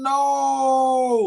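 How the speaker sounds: "no" stretched out long with heavy stress. Describing how a woman responds to something you do: long, stressed no. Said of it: "that long no and stress it out like that".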